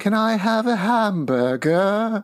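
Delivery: very high-pitched, slow, drawn-out British cartoon accent. Imitating a little cousin at a barbecue, in a Peppa Pig accent. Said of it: "adopted a Peppa Pig accent".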